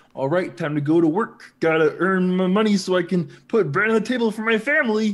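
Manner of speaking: goofy, dopey, doofy, high dim-witted simpleton voice. Mocking a van theft, the speaker voices an imagined electrician in a doofy idiot voice. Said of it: "It's a great voice. For just some doofy idiot".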